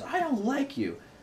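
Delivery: very high, tearful crying little-kid voice, acted out. Retelling what a crying child said: imitating Maverick crying. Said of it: "he's crying".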